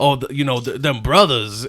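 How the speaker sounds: put-on southern drawl accent. Retelling how Theo talks in videos: imitating Theo's southern twang.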